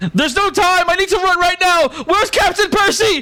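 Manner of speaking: very high, drawn-out, far-calling yell. Voicing a character running into camp: yelling out loud. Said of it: "yelling out loud as he's running into the camp".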